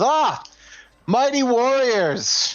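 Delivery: put-on very high, elderly orc voice, calling out. Storyteller voicing an elderly orc who walks over to the group, elderly orc calling out. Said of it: "this elderly orc ... kind of calls out, goes".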